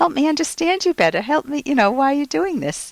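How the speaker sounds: light smiling tone. A speaker demonstrates how to respond without biting the bait, with a smile in the voice. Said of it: "can you hear the kind of smile in my voice".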